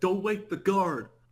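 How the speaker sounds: acted hollering yell, high and loud. Retelling a scene where a character yells a warning: imitating someone yelling. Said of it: "he yells and he's like".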